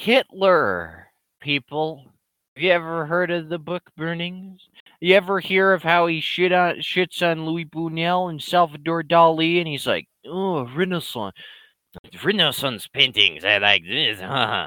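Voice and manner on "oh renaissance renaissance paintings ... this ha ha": put-on voice sliding into a French-sounding accent. Mocking Hitler's taste in art, imitating Hitler sounding too French. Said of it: "that sounds too French".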